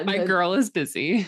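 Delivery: normal talking voice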